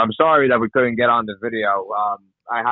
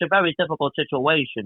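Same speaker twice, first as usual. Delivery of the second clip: hammed-up, exaggerated mob boss voice; 5 semitones higher than usual. Asked to do it on the call, the speaker performs a Tony Soprano impression. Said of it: "I do a really good Tony Soprano impersonation".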